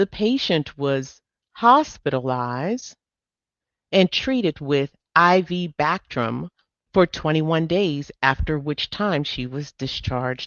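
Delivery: measured, slow, unhurried, deliberate reading aloud. Presenter reading a case question aloud for a chat audience, reading slowly. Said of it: "And I'm reading slow because".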